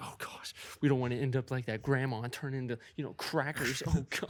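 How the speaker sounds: put-on, nervous, flustered, panicky fretting. Acting out a scene where the crew must choose a cracker: imitating stressed-out characters.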